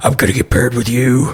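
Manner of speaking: hushed, hissed stage whisper. Playing a character who half-whispers to one of the Tellurians, half-whispering. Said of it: "he whispers to one of the Tellurians".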